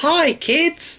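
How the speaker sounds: fake creepily happy presenter voice. Imitating a kids' TV presenter: creepily happy presenter voice. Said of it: "Children's T V presenters now are kind of creepily happy".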